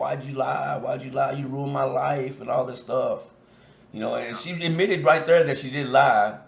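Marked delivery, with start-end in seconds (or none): 0.0-2.4 tearful, trembling, crying voice. Retelling confronting one of the girls that lied: reenacting own crying accusation. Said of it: "crying, like, shaking, like".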